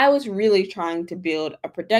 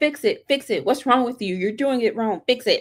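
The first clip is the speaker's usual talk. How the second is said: play-acted impatient nagging scold, mock yelling; 2 semitones higher than usual. Advising patience with AI, the speaker acts out mock yelling at the AI. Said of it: "Don't just yell at the A I".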